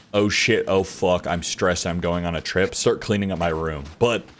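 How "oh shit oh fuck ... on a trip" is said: usual speaking voice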